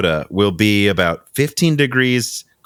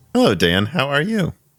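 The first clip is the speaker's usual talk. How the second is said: put-on pleasant, unaggressive, pitched-up tone; 5 semitones higher than usual. Greeting the co-host at the start, put-on pleasing unaggressive tone. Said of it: "We're gonna talk the entire episode in this tone".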